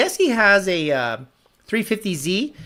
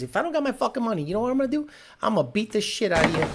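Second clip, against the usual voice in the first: put-on raised, pitched-up New York Italian accent; 5 semitones higher, 5 dB quieter than usual. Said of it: "Joe Pesci, banker, banker scene".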